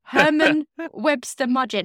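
loud, high voice, words breaking up with laughter. Trying to read out a serial killer's real name: laughing while talking. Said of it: "I'm laughing too much".

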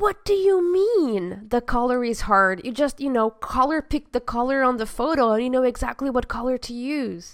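irate, angry, clueless-sounding rant. Pretending for the podcast to be a very angry and ignorant customer. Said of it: "pretend to be a very angry and ignorant customer".

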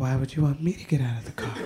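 soft and soothing voice. Retelling a calm reply to an angry woman: Bob Ross voice. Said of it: "I hit her with the Bob Ross voice".

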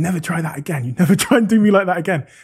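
put-on, emphatic, mild, half-yelled scolding. Retelling screaming at the phone while recording a workout video for the group, retelling a scream. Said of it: "I'm I'm screaming at the phone".

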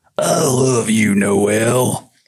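very slow cartoon voice, a word drawn out. Reading a famous person's last words, trying a Yosemite Sam voice. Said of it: "he used the Yosemite Sam".

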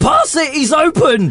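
very high-pitched, urgent yelled scream. Retelling what was screamed during the play: imitating own scream. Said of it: "I screamed".

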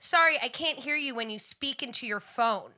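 acted schoolmarm-stern snippiness. Retelling a scolding to a customer speaking into a phone: bitchy stern remark. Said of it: "I get real bitchy".

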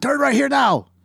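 very high-pitched, barked, angry yell. Imagining a GPS that yells at the driver, the speaker voices it: angry South Korean yelling. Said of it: "an angry South Korean just yelling at you".

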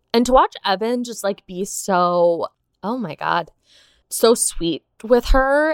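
slow, choked-up voice, near tears. Talking about watching evan comfort her, on the verge of tears. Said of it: "I'm gonna start crying".

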